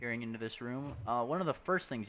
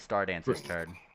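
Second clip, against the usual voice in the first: plain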